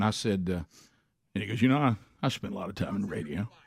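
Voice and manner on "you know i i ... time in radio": put-on mellow old-school DJ delivery, laid-back and cool. Retelling being picked up at the airport: imitating Dan's laid-back radio voice. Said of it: "he talked like this right here".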